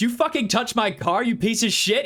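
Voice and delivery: angry, menacing, high-pitched threatening tone. Voicing an armed homeowner pointing a gun at a visitor: threatening armed homeowner. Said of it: "He pulls, pulls the gun out".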